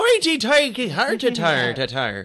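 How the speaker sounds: put-on stage Irish accent. Acting out a joke Irish guy: joke Irishman accent. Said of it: "the Irish guy's like".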